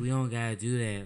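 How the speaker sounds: spaced-out, stoned-sounding, easygoing voice.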